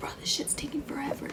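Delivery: very soft, unvoiced, muttered whisper.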